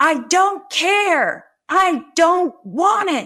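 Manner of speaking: shrill, high shout, stretched out long. Retelling smacking an egg from her daughter's hand: imitating her own yell. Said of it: "and I yelled".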